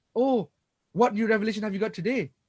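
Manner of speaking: mock jeering, scornful, taunting tone. Recounting what Quraysh leaders said to the Prophet, retelling a mocking taunt. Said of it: "In a mocking tone".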